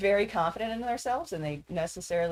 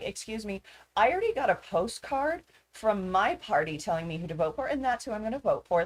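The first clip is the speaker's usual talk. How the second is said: mock snippy, sassy, dismissive delivery; 2 semitones higher than usual. Retelling a neighbor's reply at the door while canvassing: imitating a sassy neighbor. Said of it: "they were being sassy to me".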